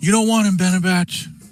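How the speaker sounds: high, loud yell. Voicing a character who yells at another character: yelling. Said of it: "she yells".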